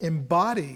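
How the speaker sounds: embody stressed, stretched out slow, lecturing tone.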